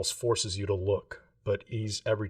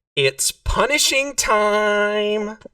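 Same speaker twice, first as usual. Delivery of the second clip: very high, very loud, echoing booming female voice; 12 semitones higher, 11 dB louder than usual. Narrator voices a sourceless entity heard all around the players, loud booming female voice. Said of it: "Sourceless but booming from all around you".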